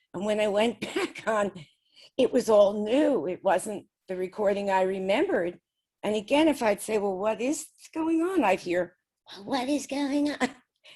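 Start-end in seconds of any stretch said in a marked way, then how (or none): 9.3-10.4 high, silly put-on voice. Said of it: "in that silly voice".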